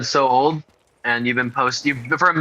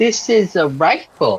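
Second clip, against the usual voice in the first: put-on high, childish little-kid voice, matter-of-fact; 5 semitones higher, 3 dB louder than usual. Speaker mocking how the other speaker said a line, in a five-year-old's voice. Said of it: "You said that like you're five years old".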